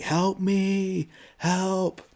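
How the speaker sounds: mock high-pitched yelling. Retelling a film scene where a character calls for help: imitating Josh yelling.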